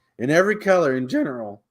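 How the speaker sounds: voice breaking and cracking partway through. Reading rules aloud, voice cracking. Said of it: "voice crack".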